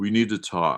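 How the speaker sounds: low, funereal, undertaker-like voice. Recounting what Brian Perry said after a phone call, undertakerish voice. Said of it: "this kind of undertakerish voice".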